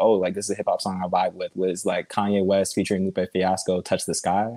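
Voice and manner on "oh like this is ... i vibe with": ordinary delivery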